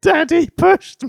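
put-on very high, raspy, rough child's shouted complaining. Retelling what the daughter shouted after hurting herself: imitating a child shouting. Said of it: "turned around and shouted out".

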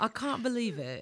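soft, laid-on fake British accent. Teasing a co-host by copying her accent: put-on british accent. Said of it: "Her British accent".

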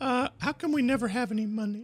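put-on very high little boy voice. Acting out an imagined family dinner: voicing the father Daddy. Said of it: "that's my impression".

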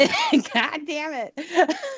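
put-on very high cartoon kid voice, pitch swinging wildly. Echoing the yell the other speaker just retold, in a Cartman voice. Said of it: "You did that with a Cartman voice".

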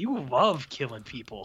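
fired-up, passionate voice. Retelling a Klingon warrior lawyer's courtroom accusation: imitating a fired-up lawyer. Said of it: "That's how fired up this guy is".

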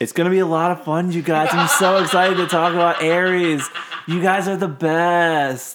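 heavily sarcastic, laid on thick, "best" stretched out. Introducing the first episode, about Aries, to you guys, dripping with sarcasm. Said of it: "That was seeping with sarcasm".

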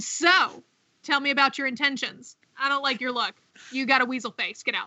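plain

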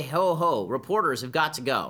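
ordinary talk, nothing marked

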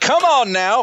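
put-on Appalachian accent. The speaker retells talking to their dogs, slipping into an Old Gods of Appalachia accent. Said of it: "I've been listening to this Old Gods of Appalachia podcast".

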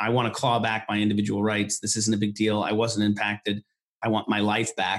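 ordinary talk, nothing marked

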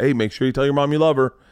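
mock aggressive delivery. Retelling how he greeted a kid at the car door, imitating his own aggressive tone. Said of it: "I'm a little aggressive".

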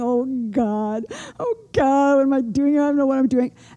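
mock stressed-out, anxious, weepy, tearful crying. Mother retelling pulling over by the road, acting out her own crying. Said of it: "and I'm crying".

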